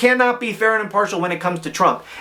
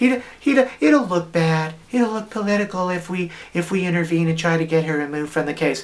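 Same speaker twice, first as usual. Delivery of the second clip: put-on soft-spoken, wimpy voice. Podcast host pictures Garland answering, in a soft-spoken little wimpy voice. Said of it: "in his most soft-spoken little wimpy voice".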